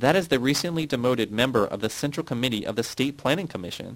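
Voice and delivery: ordinary talk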